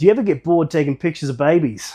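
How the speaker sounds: put-on Australian accent. Retelling what she asked the other day, in an Australian accent. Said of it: "I'll do it in Australian".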